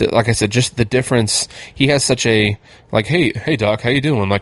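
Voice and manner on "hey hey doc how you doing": easygoing, friendly, normal everyday dad voice. Praising an actor's performance, show how he greets the Doc, in Campbell Scott's normal dad voice. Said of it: "it's such a normal dad voice".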